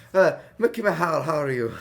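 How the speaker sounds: smoothed-up, refined delivery. Playing a robot greeting a woman he finds hot: trying to sound polished. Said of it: "trying, like, like, shine myself up".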